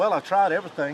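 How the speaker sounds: ordinary talk, nothing marked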